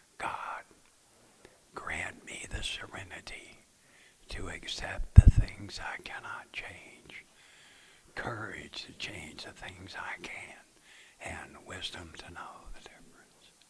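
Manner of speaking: slow, hushed, drawn-out whisper. Leading a meeting in saying the Serenity Prayer together: slow whisper. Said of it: "we will slowly whisper the Serenity Prayer".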